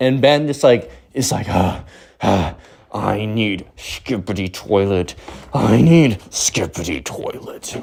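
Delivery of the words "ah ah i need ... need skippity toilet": dark, low, very slow demonic drone. Retelling what Ben said as he got dark, imitating Ben going demonic. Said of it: "he gets all like dark and de- like demonic".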